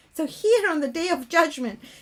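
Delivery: ordinary talk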